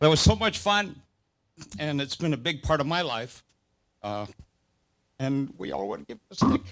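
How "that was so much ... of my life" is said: touched, moved, heartfelt, emotional tone. Speaking about Frank and the sport they got to play: getting emotional. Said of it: "I'm getting emotional again".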